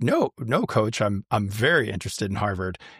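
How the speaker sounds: usual speaking voice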